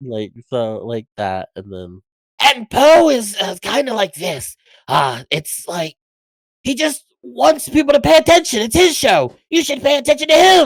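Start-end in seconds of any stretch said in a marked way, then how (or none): 2.4-10.7 high, loud, scratchy voice. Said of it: "it's a very scratchy voice".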